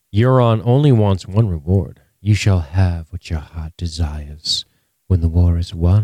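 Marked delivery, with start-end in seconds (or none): 2.2-6.1 put-on sultry queen voice. Retelling a queen's reply to a reward: imitating sultry Cersei. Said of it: "Cersei being all sultry".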